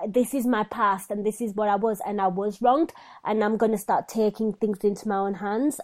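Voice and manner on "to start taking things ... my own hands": ordinary talk, nothing marked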